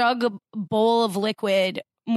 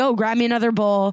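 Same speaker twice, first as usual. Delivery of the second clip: mock smarmy sarcasm, faster; 3 dB louder than usual. Retelling someone's remark while judging the food, mock smarmy sarcasm. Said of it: "semi smarmy sarcastic like".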